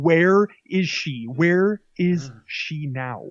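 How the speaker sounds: very slow, every word drawn out. Retelling a sketch where Batman tries out voices: John Malkovich impression. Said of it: "he does, like, John Malkovich".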